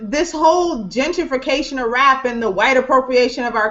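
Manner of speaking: ordinary talk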